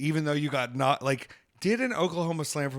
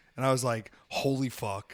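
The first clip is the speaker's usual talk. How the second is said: ordinary talk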